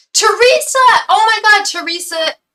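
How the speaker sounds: very loud, very high, excited shrieking yell. Greeting another speaker by name: excited yelling. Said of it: "Did I yell?".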